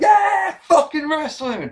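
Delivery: play-acted, overexcited, very high yelling outburst. Retelling own first-match commentary: imitating own excited outburst. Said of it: "'cause I'm normally so excited".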